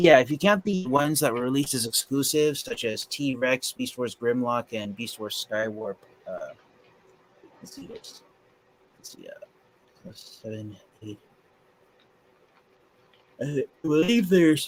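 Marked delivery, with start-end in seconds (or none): 10.1-14.7 yawning while speaking, much higher pitch. Speaker counting toy releases with a co-host after a long day, yawning. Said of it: "sorry for yawning".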